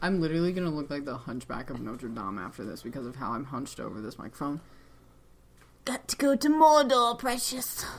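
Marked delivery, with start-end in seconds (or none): 5.9-7.9 high, loud, drawn-out creature voice. Hunched over a microphone, speaker breaks into a Smeagol voice. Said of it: "That's Smeagol".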